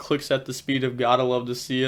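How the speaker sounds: ordinary delivery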